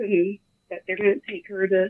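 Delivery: normal talking voice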